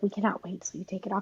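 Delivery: put-on affectionate tone. Retelling what people used to say to them about the mask, imitating a loving tone. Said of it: "they were saying it in a loving way".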